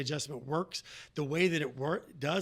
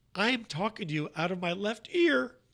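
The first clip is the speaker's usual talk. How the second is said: put-on tearful crying voice, higher pitch; 4 semitones higher, 3 dB louder than usual. Retelling a phone call from an older lady, imitating someone crying. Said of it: "She's crying".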